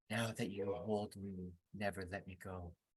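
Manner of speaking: slow, very quiet, barely audible half-whisper. Sending a magic message to a character in a half-whispering voice. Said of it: "a whispering voice".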